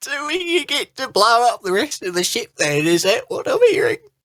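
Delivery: very high, happy, teary bawling through grin. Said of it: "He's starting to like bawl, but with like a smile".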